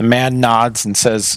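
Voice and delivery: ordinary talk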